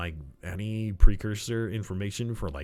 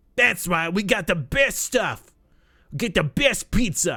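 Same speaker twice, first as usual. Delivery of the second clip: failed put-on Boston accent, very high, loud; 9 semitones higher, 6 dB louder than usual. Trying a Boston accent as a joke: failed Boston accent. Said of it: "Should we have a Boston accent?".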